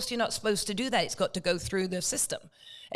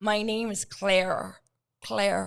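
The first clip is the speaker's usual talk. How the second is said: slow, drawn-out put-on American accent. Retelling answering a man who asked her name, put-on American accent. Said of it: "my best American accent".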